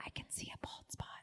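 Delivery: very quiet, breathy whisper. Retelling a discreet remark about a bald spot: imitating a whisper. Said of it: "whispered to me".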